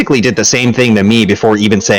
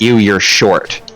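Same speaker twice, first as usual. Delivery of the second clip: put-on disgusted tone. Retelling what a date said on first meeting: retelling a disgusted tone. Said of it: "with a really disgusted tone".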